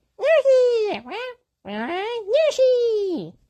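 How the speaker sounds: very high, swooping little character squeak. Talking about casting, the speaker shows off their own Yoshi impression. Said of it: "hear my impression of Yoshi".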